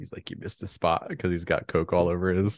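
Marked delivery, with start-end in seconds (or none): 0.3-1.1 put-on whisper, quieter. Retelling a scene where one character walks past another: imitating a whisper. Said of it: "whispers it to him when he walks by him".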